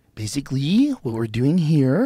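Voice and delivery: tech-style uptalk, phrases lifting at the end. Discussing annoying tech voices, demonstrating tech-guy uptalk. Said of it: "the up voice".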